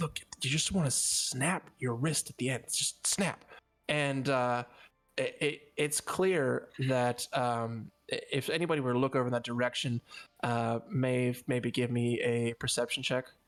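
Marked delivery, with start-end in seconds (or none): 0.0-3.4 private, confiding stage whisper. Pulling someone over to the side to give stealthy advice, whispering real low. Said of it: "you're whispering real low".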